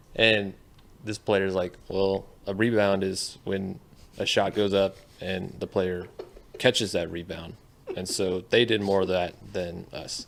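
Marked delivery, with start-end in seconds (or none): none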